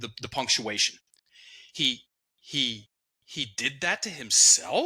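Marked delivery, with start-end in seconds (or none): 1.7-4.9 uptalk rising on the word himself. Retelling a line said with uptalk: uptalk rising on himself. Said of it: "She said it clunky and with uptalk".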